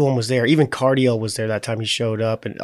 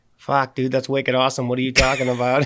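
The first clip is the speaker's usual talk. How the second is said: put-on thick Boston accent. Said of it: "such thick, like, kind of Boston accents".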